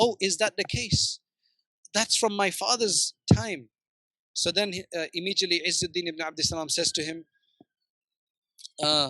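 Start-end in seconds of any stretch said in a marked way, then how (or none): 0.0-3.7 mock quavering, shaken, trembling voice. Retelling the story, the speaker quotes the shaken ruler, imitating a trembling voice. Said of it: "in a trembling voice".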